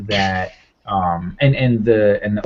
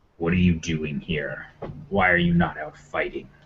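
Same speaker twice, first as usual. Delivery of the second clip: deep, swooping devil voice; 4 semitones lower, 6 dB quieter than usual. Voicing a horned winged devil questioning a player: horned winged devil voice. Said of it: "it looks at you, and it says".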